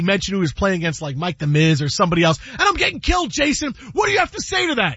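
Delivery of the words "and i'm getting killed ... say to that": very high, pleading, upset rant. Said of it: "And he goes".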